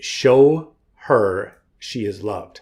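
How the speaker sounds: slow, choked-up, emotional voice catching in the throat.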